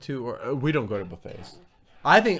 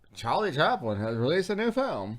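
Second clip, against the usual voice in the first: put-on soft, old-time forties newsreel radio announcer delivery; 5 dB quieter than usual. Reacting to an old commercial, showing how announcers talked, forties-fifties announcer voice. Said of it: "They all talk like this".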